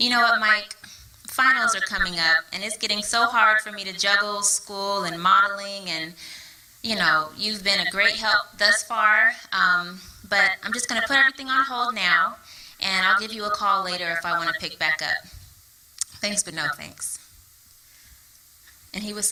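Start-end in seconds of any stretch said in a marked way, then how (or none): none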